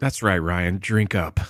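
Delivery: loaded, sexually suggestive innuendo tone. Telling the other speaker to drink some water, in a suggestive tone. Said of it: "Why'd you say it sexually?".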